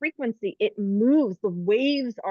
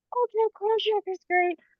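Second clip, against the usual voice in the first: very high, play-acted, tongue-in-cheek mocking parody voice; 11 semitones higher than usual. Poking fun at the spiritual community, quoting healers in mocking put-on voice. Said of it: "I'm kind of poking fun at the spiritual community with my voice right now".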